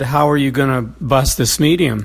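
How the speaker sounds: ordinary talk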